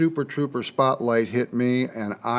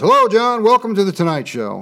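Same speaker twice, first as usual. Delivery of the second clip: acted nonchalant, breezy, high and sing-song; 8 semitones higher, 7 dB louder than usual. Retelling how a band member greeted him at Tonight Show rehearsal, retelling a nonchalant greeting. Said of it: "he just very nonchalantly".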